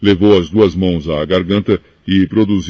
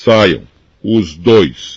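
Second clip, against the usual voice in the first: rough, hoarse, commanding voice. Narrator reads the uncle ordering the two boys out, hoarse commanding voice. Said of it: "ordenou com voz rouca".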